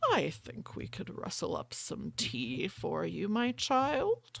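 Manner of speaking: low, unhurried delivery. Voicing a character who turns with a slow smile, in a low, slow voice. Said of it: "something low and slow".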